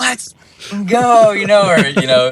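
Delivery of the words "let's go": put-on excited, high, pumped-up shout. Recalling getting out after heat races and qualifying: retelling an excited scream. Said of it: "I'm screaming".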